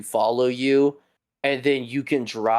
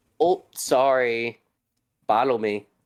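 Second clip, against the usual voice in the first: toddler-like imitation, slower. Telling the listener how their voice commands sounded, mimicking a toddler trying to speak. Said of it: "like a two year old trying to speak".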